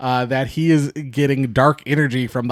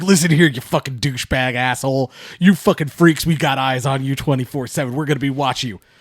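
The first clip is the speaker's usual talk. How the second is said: put-on aggressive, ranting voice. Retelling a man's phone message, mock-aggressive Gerald Rivers rant. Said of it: "he's really aggressive on the phone".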